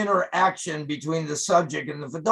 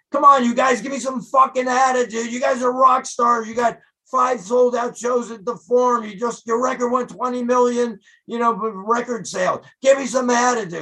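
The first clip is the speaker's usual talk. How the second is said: high, raised, goading hollering; 7 semitones higher than usual. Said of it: "I'm constantly throughout the shoot yelling and screaming".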